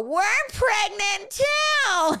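put-on strange emotional voice. Retelling telling him they are pregnant too, in a weird emotional voice. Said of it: "this weird voice".

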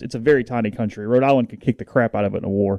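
ordinary talk

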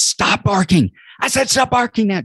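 mock very high, fed-up, frustrated scream. Retelling a mom's story of her son at the dog: imitating someone screaming at a dog. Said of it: "just screaming at the dog".

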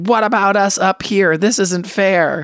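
high-pitched, put-on screaming. Recounting a woman on the balcony above the line, imitating a woman screaming. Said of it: "she was just like screaming like".

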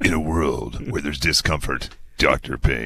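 dramatic movie trailer announcer voice. Launching into a joke movie trailer just for the listener, in a movie trailer voice. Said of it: "This is my movie trailer voice".

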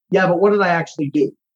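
ordinary talk

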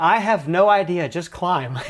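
mock urgent answer, called out loud across distance. Mics failed, and he yelled back at the speaker; retelling a yell. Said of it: "he's yelling back at me".

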